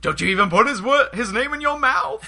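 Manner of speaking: high, loud, jealous delivery. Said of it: "the delivery he did".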